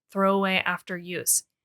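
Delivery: normal talking voice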